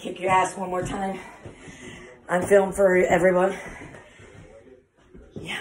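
short of breath, winded. Right after fighting Bob, filming for everyone, out of breath. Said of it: "I'm out of breath".

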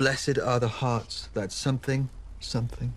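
plain

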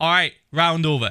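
plain

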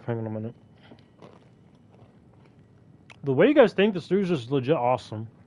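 talking with mouth full. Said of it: "I have food in my mouth".

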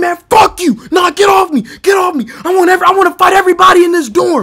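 acted furious outburst. Retelling being struck with a stick in a dorm, acting out freaking out. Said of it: "I'm spazzing".

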